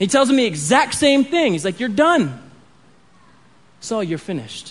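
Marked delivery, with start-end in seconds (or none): 1.8-4.7 put-on New York accent. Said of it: "he's got a New York accent".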